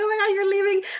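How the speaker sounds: mock very high, weepy, tearful crying voice. Retelling being dropped off at school: imitating mom crying. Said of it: "she was, like, crying".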